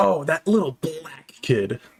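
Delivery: hard-pressed, heavy emphasis on every word. Showing how a remark said with more emphasis sounds: heavy emphasis. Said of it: "say it with more uh emphasis".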